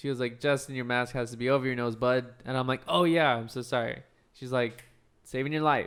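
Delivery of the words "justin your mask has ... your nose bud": usual speaking voice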